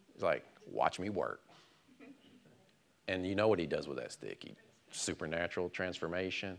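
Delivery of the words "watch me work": said with sarcasm. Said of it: "My Moses is sarcastic".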